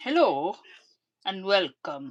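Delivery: booming put-on voice, very loud. Imitating Toes saying a greeting, Toes impression. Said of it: "That's my impression of toes".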